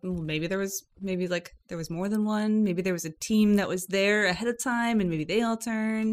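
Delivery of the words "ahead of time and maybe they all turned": ordinary talk, nothing marked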